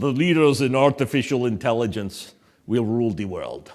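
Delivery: put-on Russian accent throughout. Quoting what a russian speaker once said, in a russian accent. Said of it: "That was my Russian accent".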